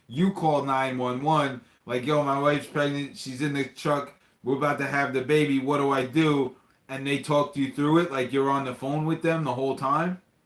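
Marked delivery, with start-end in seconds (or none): none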